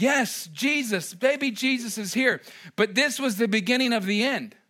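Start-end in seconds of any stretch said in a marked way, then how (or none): 0.0-2.4 mock thrilled, slow, drawn-out exclamation of delight. Imitating how people react to seeing the manger: imitating excited people. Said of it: "They get so excited because it's like".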